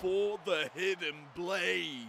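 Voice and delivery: dramatic, slow, loud booming call.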